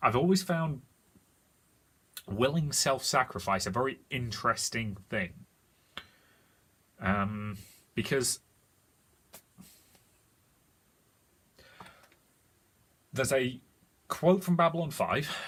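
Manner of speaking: slow, tearful, choked-up musing voice. Describing a character's final sacrifice: tearing up. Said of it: "Sorry, I'm tearing up already".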